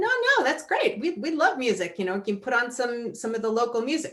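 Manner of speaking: ordinary talk, nothing marked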